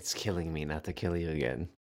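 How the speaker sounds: very low, deep, very quiet half-whisper. Quoting the Joker's line to Jason Todd: Joker half-whisper. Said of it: "You can almost hear him, like, whisper it".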